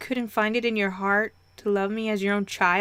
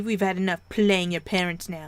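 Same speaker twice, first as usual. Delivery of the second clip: plain reading voice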